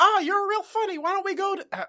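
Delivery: squeaky, very high-pitched character voice. Recapping an episode, speaker quotes a character's line in a Barney Fife impression. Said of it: "Great Mickey Mouse".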